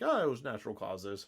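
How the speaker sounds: ordinary delivery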